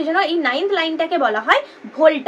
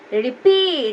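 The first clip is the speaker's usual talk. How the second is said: 'peat' in 'repeat' stressed and lengthened. English lesson on word stress in repeat: stress on 'peat' in repeat. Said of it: "রিটার থেকে আমরা পিটাকে একটু বেশি উচ্চারণ করছি".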